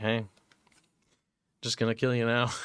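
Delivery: mock-bored, acting out lost interest. Streamer voicing a game character who lost interest in killing him, mock-bored. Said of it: "looks like he lost interest".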